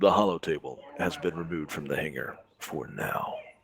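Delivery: suspenseful, dramatic, suspense-building delivery. Reading a line aloud to the others, doing it in a suspenseful voice. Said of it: "I got to do this in a suspenseful voice".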